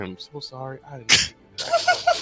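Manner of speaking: muttered under the breath. Telling a game scene, a character glances at another and speaks under his breath. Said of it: "under his breath".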